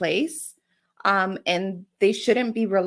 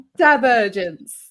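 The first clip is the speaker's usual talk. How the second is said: loud put-on British accent on divergence; 3 semitones higher, 6 dB louder than usual. Repeating a term another speaker just confirmed: put-on British accent. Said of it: "But with the British accent".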